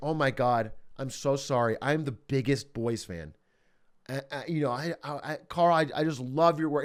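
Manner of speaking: slow, low, near-tearful, stumbling and gushing. Telling how a girl stopped someone to say she's a fan, imitating a near-tearful fan. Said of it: "And she's like almost in tears".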